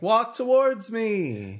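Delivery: very high, loud, swooping shout. Playing a tabletop game character who isn't paying attention, yelling into the wall. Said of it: "sort of like yelling into the wall".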